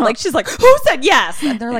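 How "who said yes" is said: play-acted scared, frantic, high, loud, freaked-out cry. Retelling a scared girl's line from a show: imitating someone freaking out. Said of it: "scared girl is still, like, freaking out".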